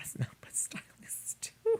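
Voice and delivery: high whisper, under the breath.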